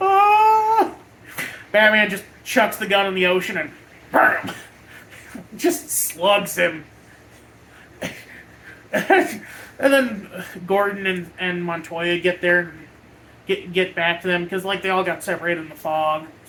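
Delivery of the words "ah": high, loud startled cry. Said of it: "and he's just like".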